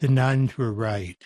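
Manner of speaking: soft, mild-toned voice. Retelling a reply when an audience member asks about blindness: soft voice. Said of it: "lower my eyes and say in a soft voice".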